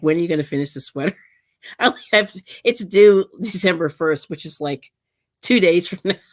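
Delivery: speech broken by laughter throughout the words. Giving an update on a sweater still in progress, laughing while talking. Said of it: "I'm sorry, I'm laughing".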